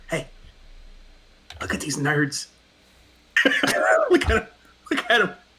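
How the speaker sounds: full-voice mock stage-whispered snarky aside. Leaning over to two companions in a role-play scene, whispering. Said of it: "I'm whispering".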